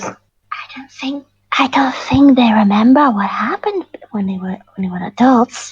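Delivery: theatrical stage whisper. Voicing a character leaning in to a companion: theatrical whisper. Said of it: "in the most theatrical whisper".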